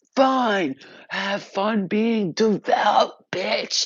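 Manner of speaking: acted, very slow, dragged-out, loud demon screech. Retelling the demon's parting words as it sank back: imitating a demon screaming. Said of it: "he screamed out".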